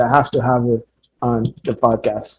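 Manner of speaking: ordinary talk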